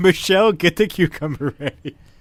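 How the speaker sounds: talking through laughter. Repeating a joke line while crying from laughing: laughing while talking. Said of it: "I'm actually crying from laughing".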